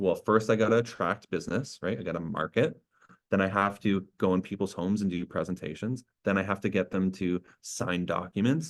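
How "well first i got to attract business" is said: ordinary delivery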